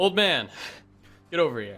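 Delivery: loud high-pitched yell. Playing a character in a game, calling an old man over, yelling. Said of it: "and yell".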